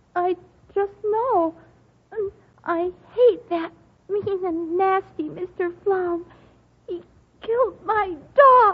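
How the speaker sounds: loud, tearful sobbing through the words. Answering how she knows the dog will die, crying. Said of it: "stop crying".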